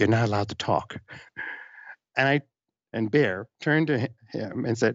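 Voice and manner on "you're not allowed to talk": mock-polite, hushed, quiet voice. Retelling what a Disney park person leaned in and told them, retelling a quiet polite warning. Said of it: "said very quietly but very politely".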